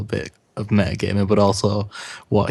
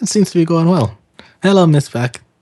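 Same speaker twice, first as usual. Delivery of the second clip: high, loud, cheerful upbeat tone. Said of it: "he just says".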